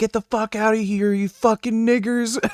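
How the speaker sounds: put-on shrill, very high, all-out screaming yell. Retelling how a seventy-year-old man started screaming at the speaker: imitating a man screaming. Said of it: "he starts screaming and yelling".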